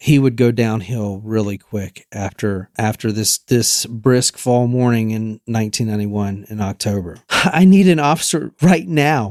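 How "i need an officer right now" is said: high, cracking crying shout, voice breaking through tears. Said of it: "He's shouting. His voice is cracking. He's crying".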